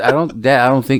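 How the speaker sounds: ordinary talk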